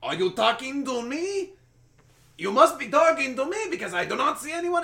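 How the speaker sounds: shrill, loud, squealing, bad Russian accent. Retelling a movie scene heard over radio: Fearless Leader shitty Russian accent. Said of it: "he's doing this shitty Russian accent, like the Fearless Leader".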